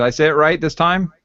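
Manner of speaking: plain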